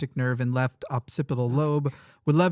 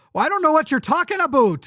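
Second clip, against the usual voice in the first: exaggerated Canadian accent, very high, shrill and swooping; 13 semitones higher, 5 dB louder than usual. Showing how a Canadian accent gets amplified, in an exaggerated Canadian accent. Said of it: "you'll get very Canadian. Your Canadian accent will amplify ... I exaggerated".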